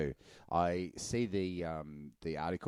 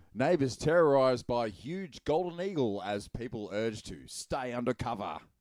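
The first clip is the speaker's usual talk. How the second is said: pitched-up newsreader voice, headline-style broadcast delivery; 5 semitones higher than usual. Reading out a headline for the group: news voice. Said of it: "I'll do it in my um. / News voice".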